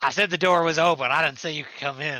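rough, gruff voice. Narrating a tabletop scene, voicing the man behind the door, gruff voice. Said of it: "He says".

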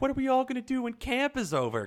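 put-on very high, whiny, mopey drunk voice.

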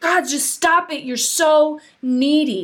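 fed-up snapping tone. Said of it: "She's like".

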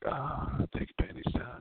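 high-pitched, sultry, worked-up, angry voice. Acting out how the listener sounds right now, in a mock sexy, mad voice. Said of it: "You're in a sexy, mad voice".

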